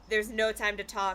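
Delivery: ordinary delivery, nothing marked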